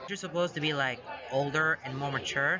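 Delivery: ordinary delivery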